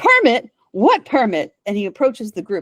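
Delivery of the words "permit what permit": loud, pitched-up yell. Voicing a character barreling in on the group: yelling.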